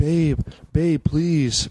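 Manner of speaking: begging, pleading voice. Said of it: "Like that, he's one of those guys".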